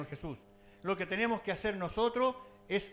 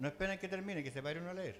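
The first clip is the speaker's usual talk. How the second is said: ordinary talk, nothing marked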